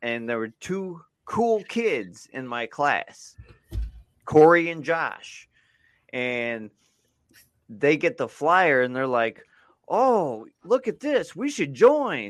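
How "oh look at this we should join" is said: very high, swooping, fake-eager sarcastic gush. Recalling two classmates reacting to a Boy Scouts flyer, imitating sarcastic classmates. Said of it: "they were totally being sarcastic".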